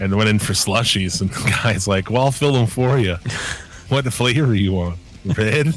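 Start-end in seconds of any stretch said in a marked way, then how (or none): 2.1-5.8 put-on Southern US accent. Retelling a late-night slushie run, the speaker quotes the store guy in a southern accent. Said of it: "how he got a southern accent".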